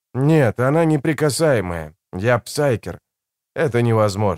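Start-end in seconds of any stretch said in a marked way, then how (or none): none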